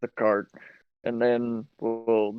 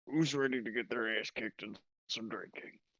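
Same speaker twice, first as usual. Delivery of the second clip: cocky, quieter; 2 semitones higher, 10 dB quieter than usual. Player voicing Kronk calling out drinking rivals, Kronk's cocky challenge. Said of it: "Because Kronk thinks he's got some big britches on for a man wearing a skirt".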